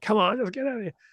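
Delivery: high-pitched, urging tone.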